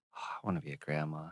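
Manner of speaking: very quiet, low, under-the-breath mutter. Retelling a mother's remark while buying shoes: imitating someone muttering under breath. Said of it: "under her voice, under her breath".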